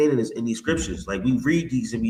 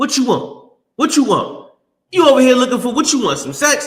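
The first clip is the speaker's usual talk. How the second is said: very high, very loud, shrill hollering; 13 semitones higher, 8 dB louder than usual. Retelling a comic Bible story where a man meets Keisha: loud Keisha voice. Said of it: "why you talking so loud?".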